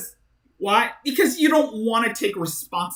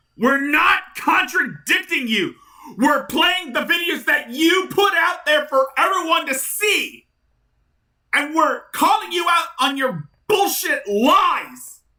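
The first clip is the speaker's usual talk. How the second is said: high, raised-pitch yelling; 7 semitones higher than usual. Calling out Shanny over the videos she put out, yelling. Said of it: "I'm sorry I was yelling".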